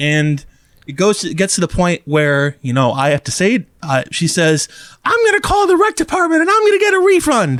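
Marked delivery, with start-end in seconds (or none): 5.0-7.6 very high, fast, escalating angry insistence. Retelling what a woman demanding a refund said to the speaker, imitating her angry demand. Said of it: "she gets angrier and angrier".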